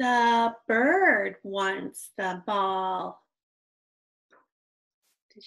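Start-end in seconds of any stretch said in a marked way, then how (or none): 0.0-3.2 slow reading with a full stop at the period. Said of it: "Did you notice?".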